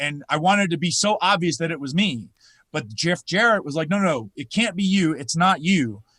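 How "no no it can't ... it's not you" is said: ordinary talk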